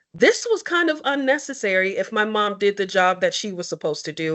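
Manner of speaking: ordinary delivery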